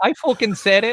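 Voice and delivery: put-on Irish accent, very high and loud. Owning up to writing the tweet being discussed, sounding Irish. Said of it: "That sounded Irish".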